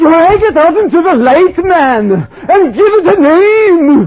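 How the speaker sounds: put-on heavy Welsh preacher accent, very high and loud. Recalling a preacher leaning over the pulpit, quoting him in heavy Welsh accent. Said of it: "in his heavy Welsh accent".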